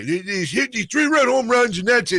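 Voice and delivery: put-on old man voice, pitched very high. Predicting next season's baseball, channelling a put-on voice: Joe Pittman old man voice. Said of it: "I channel my Joe Pittman old man voice".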